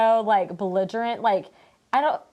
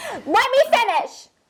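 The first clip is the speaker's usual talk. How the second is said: very high, squeaky, abrupt cutting-in delivery; 14 semitones higher, 4 dB louder than usual. Retelling a rose ceremony scene where a contestant is a mess: imitating Victoria P. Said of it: "And literally she's speaking".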